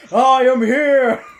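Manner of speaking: very loud, high, booming heroic shout. Answering a cue during a group game, loud All Might shout. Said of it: "I had my thing on full blast".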